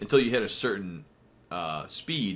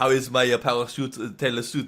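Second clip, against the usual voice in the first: put-on French accent, higher and louder; 3 semitones higher, 5 dB louder than usual. Retelling the tailor's question about his parachute suit: imitating a French accent. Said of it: "Why do you sound French?".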